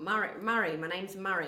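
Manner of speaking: loud, slow, throaty put-on voice. Demonstrating to others how a voice is made, speak almost down in the throat. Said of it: "it's sort of almost down in the throat".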